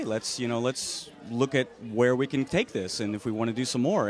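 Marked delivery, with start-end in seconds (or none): none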